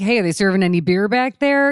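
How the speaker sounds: loud, joking delivery. Retelling a joke called out to a woman on a plane: retelling a loud joking line. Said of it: "And I said it loud".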